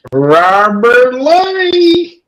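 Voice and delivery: very high put-on country drawl, Lee stretched out. Calling out to someone by name in a put-on country accent. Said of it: "that country ass accent".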